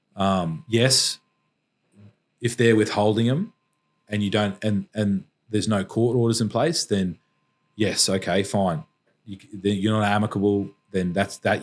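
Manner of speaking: ordinary delivery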